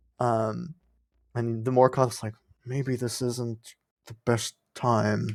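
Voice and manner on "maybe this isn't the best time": hushed whispering voice. Voicing the Morkoth, who speaks back to the player in a crowd: whispering. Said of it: "whispers back to you".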